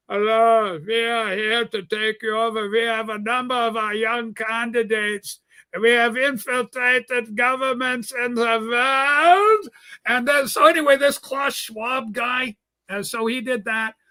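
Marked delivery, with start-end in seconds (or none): 0.1-9.7 put-on villain voice, "world" drawn out. Mocking the head of the World Economic Forum, do Klaus Schwab as a Bond villain. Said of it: "the guy talks like a Bond villain".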